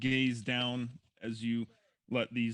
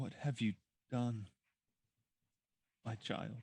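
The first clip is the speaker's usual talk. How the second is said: gentle, soft, hushed female voice; 7 dB quieter than usual. Narrating a scene, voicing an unseen presence speaking to the listener, in a soft female voice. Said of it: "you hear a soft female voice say to you".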